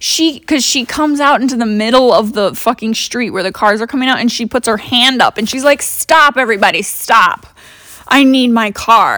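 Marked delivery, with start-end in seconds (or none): 5.8-9.2 mock very slow, dragged-out, scene-making delivery. Retelling how a customer stopped traffic in the street: imitating a lady making a scene. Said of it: "making a whole scene".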